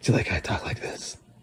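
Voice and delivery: breathy, whispered gravelly superhero voice. Asking another speaker if they like the new voice: Batman voice. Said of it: "talking like Batman".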